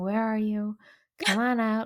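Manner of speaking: gentle, patient, calm, soothing coaxing. Retelling how a man coaxed a spider out of compost, imitating a soothing, coaxing voice. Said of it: "coaxing her with his soothing voice".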